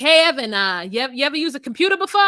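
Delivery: put-on Canadian Ontario accent. Retelling a character's call to his childhood camp friend, Ontario accent. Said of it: "Except for in a like uh Ontario accent".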